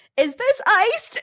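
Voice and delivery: shrill screaming, very high and very loud. Retelling how the mother questioned a staff member: imitating a scream. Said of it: "screams at her".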